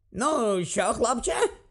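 feigned hearty cheerfulness. The uncle jumps up at dawn and addresses the boy: feigned cheerfulness. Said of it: "з удаваною бадьорістю почав він".

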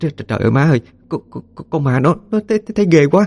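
shaky, quavering voice. Talking about a ghost they saw, the speaker says this in a trembling voice. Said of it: "run giọng nói".

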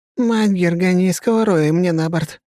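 frightened barking voice. Narrator reading a familiar voice from somewhere nearby, barking, frightened. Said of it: "рявкает где-то рядом знакомый, но непривычно испуганный голос".

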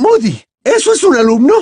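very high, loud, shrieking outcry. A professor drops her books and shouts a question at moody's ferret lesson: shouted. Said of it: "gritó la profesora McGonagall".

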